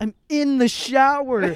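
shrill all-out shriek, very high and very loud. Telling how a kid approached them in the shower: retelling a scream. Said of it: "I screamed at him".

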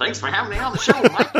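put-on very high, old-timey 1920s newsboy, paperboy voice. A guest thanks the host for having him on the show, 1920s paperboy voice. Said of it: "It's like a 1920s paperboy, I think is the affectation I'm going for".

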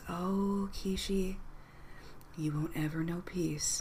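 faint, distant, taunting voice. Game narrator voicing a voice heard faintly by Kishi, faint taunting voice. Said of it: "a familiar sounding laugh and a voice".

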